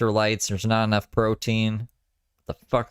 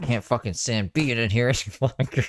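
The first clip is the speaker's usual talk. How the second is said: acted out, heated, irritated, angry, fed-up outburst. Retelling what she says when she gets all angry: imitating someone angry. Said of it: "she gets all angry".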